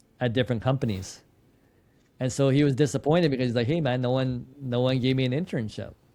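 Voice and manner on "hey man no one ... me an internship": ordinary talk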